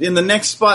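ordinary talk, nothing marked

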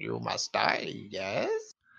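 rough croaking voice. Talking about Varys being gone, a speaker answers with a croaky Varys impression. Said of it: "He had that croaky voice".

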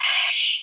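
shouting in a whisper. Retelling hearing a voice in an empty room: imitating a whispered scream. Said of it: "screaming, but in a whispered tone".

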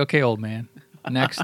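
ordinary delivery

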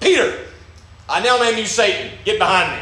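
mock loud proclaiming voice. Speaker retelling how Jesus turned around and spoke, in a loud voice. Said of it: "in a loud voice, everybody can hear".

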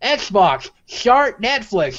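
high-pitched, very slow, commanding tone. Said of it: "And I'm like".

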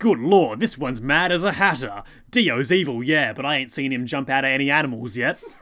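put-on broad Cockney accent. Retelling a dubbed scene, quoting Speedwagon's line: Cockney Speedwagon voice. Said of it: "Cockney Speedwagon says".

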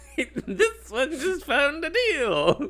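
high, very slow, mocking, teasing singsong.

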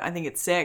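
ordinary talk, nothing marked

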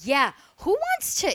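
loud hollering voice. Retelling how Mom reacted to a gift: imitating Mom yelling. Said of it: "she's, like, yelling this".

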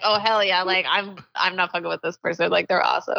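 plain

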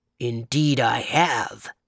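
deep, low, growly bear voice. Narrator reading a story, voicing the bear's reply in a low, deep, growly voice. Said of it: "in a low, deep, growly voice".

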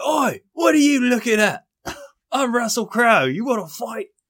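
loud, aggressive bark. Describing the actor's old brawling days, the speaker is imitating Russell Crowe picking a fight. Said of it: "He'd be like".

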